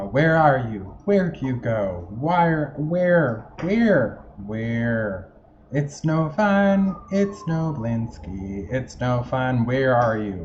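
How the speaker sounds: loud, slow, angry woman yelling. Voicing an in-game woman's lines, angry woman yelling. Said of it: "a yelling voice uh, of a woman who's angry".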